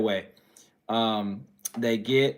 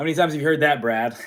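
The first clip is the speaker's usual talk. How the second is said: normal talking voice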